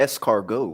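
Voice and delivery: escargot pronounced the British, anglicised way. Showing how british people say a french word: british pronunciation of escargot. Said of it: "that's how British people say it".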